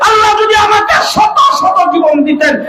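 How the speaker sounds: high-pitched screaming call.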